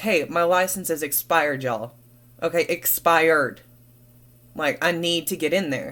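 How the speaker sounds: normal talking voice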